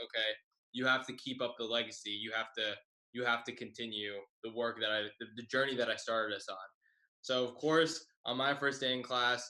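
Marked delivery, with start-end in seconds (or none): none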